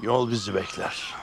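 plain reading voice

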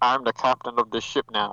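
muffled pilot announcer voice. Talking through cupped hands like a captain: muffled cupped-hands captain voice. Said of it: "cup voice".

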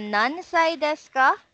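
"Nansai desu ka" rising at end.

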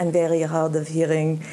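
put-on thick Israeli accent. Retelling what your mom would say to get front seats at Second City, in her thick Israeli accent. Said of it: "with her thick Israeli accent".

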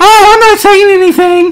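squeaked out high and loud. Showing how a tone of voice says something, speaker uses a Mickey Mouse voice. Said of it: "I sound like Mickey".

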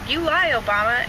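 plain

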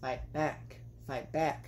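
very snarky, low, taunting tone. Retelling what a woman said after leaving her partner, mimicking a snarky tone. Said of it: "She had this very, like, snarky tone to her".

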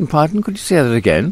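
very high, silly, put-on posh accent. Replying to a man who told him to concentrate on his driving, in a silly put-on posh voice. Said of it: "I put on this silly sort of posh voice".

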